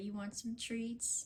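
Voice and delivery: put-on quick, little, baby-talk voice. Retelling calling a cat over with treats, in a little baby voice for cats. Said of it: "in my little voice I use for my cats".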